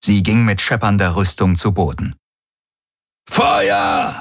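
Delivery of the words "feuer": rough, gritty, creaky voice. Narrator reads Darajos's line during a shootout: roaring. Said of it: "brüllte Darajos".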